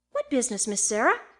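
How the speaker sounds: plain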